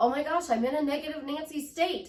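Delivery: voice jumps up high, anxious and worked-up. Showing how owning a negative state sounds: higher pitch. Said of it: "my voice went up to a higher pitch".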